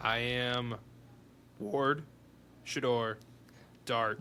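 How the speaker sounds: voice cracking partway through the line. A player lists their ranking of three picks to another player, voice cracking. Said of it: "the voice crack".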